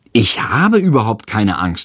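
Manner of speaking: plain reading voice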